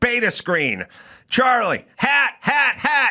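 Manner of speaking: yelling. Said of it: "You know, I yell".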